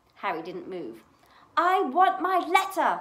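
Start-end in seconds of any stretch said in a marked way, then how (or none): 1.6-3.0 very loud, very slow, high, drawn-out yell. Narrator reads his demand to his uncle, shouted. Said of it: "he shouted".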